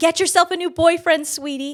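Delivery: very loud, high-pitched, taunting shout. Retelling how older women at a table called out: imitating someone yelling. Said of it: "And then they yell at me".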